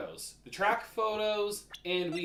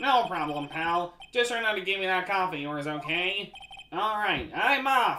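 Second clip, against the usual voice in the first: playful, fun put-on game-character voice; 3 dB louder than usual. Voicing Gumshoe while reading game dialogue: Waluigi voice for Gumshoe. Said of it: "I love Waluigi Gumshoe. It's a fun voice to do".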